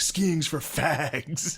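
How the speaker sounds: high, screaming, taunting voice. Retelling what a friend said over FaceTime, imitating him screaming. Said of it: "It's just screaming".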